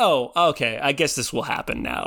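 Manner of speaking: ordinary delivery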